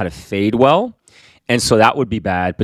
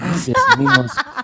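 very high aside, as if to herself. Retelling what she said under her breath after the haircut: imitating someone muttering under breath. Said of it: "under her breath".

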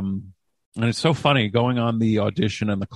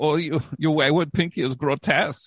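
put-on hazy European accent, French or German; 6 semitones higher than usual. Actor recalling an audition, redoing the character's line in a French-or-German-ish accent. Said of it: "I don't know if the voice I did was French or German".

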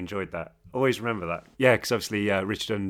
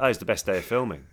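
sarcasm laid on heavy, strongly sarcastic tone. Retelling an answer to a question about filming the scene: imitating own sarcastic answer. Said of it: "giving someone a really sarcastic answer".

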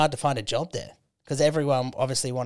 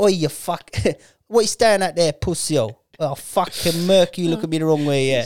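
put-on English rude boy accent; 4 semitones higher, 6 dB louder than usual. Talking about english pubs and showing off a loved accent, british rude boy accent. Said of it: "I loved the rude boy accent".

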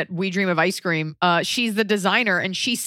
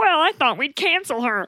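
wobbling, warbly, high, dim-witted voice; 8 semitones higher than usual. Imitating people who say this, in a Monty Python idiot voice. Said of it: "where did I get that voice?".

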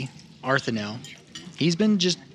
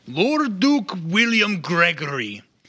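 big, loud, booming, drawn-out call; 6 semitones higher, 5 dB louder than usual. Voicing a character who raises a glass to the duke: loud booming voice. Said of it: "he just gets this loud, booming voice".

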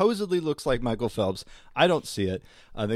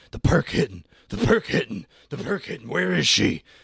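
frantic, repetitive, losing-it babbling rant; 3 semitones higher, 4 dB louder than usual. Retelling a video where a guy keeps freaking out: imitating someone freaking out. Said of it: "freaking out and going like".

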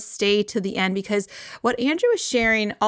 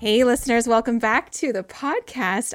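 audibly smiling. Podcast host welcoming listeners back, smiling while speaking. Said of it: "You can probably hear it in my voice. I'm already smiling".

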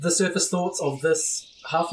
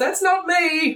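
shrill, very high character yell; 11 semitones higher, 3 dB louder than usual. Voicing the character Trissel denying something: yelling in character. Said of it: "Trissel yells".

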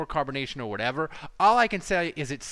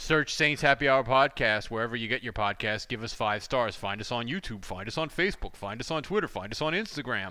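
smooth, low, professional radio-style announcer voice; 5 semitones lower, 3 dB quieter than usual. Podcast co-host showing how the lead-in would sound done professionally. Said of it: "do the lead-in professionally and be like".

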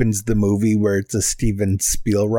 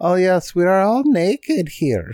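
put-on high, swooping, sing-song Swedish accent; 9 semitones higher than usual. Imitating swedish twins saying they are all naked: put-on swedish accent. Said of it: "so that you could do that impression".

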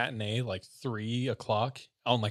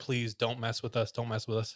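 mock begging, pleading tone; 4 dB quieter than usual. Retelling the two asking the sisters after a long talk: imitating begging. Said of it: "a lot of begging".

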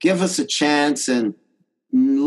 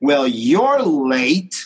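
really mean, contemptuous, disgusted tone. Retelling how a woman answered a man asking about the event, acting really mean. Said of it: "Like, really mean".

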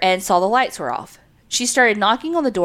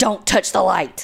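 rough, creaky, possessed demonic croak. Retelling how she sat up in the night after he turned over, The Exorcist possessed voice. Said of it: "with the same voice and says".

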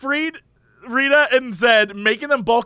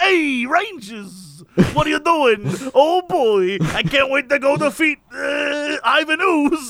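put-on slow Brooklyn accent on every word, one word stretched. Retelling a show character greeting the Rangers, as Alpha with Brooklyn accent. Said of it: "why would he have a Brooklyn accent?".

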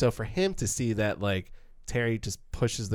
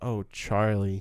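mock-disappointed tone. Describing how Brando plays Terry telling his brother he's misguided, imitating Terry, so disappointed. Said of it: "like he's so disappointed".

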